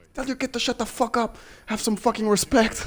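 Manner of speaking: mock yelling at a very high, shrill pitch. Retelling a coach shouting at a man after a fight: imitating someone yelling.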